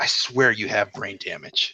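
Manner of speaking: muttered, under-the-breath half-whispered aside. Discussing the episode, a speaker quotes King Kai, imitating his under-breath half-whisper. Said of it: "he whispers under his voice".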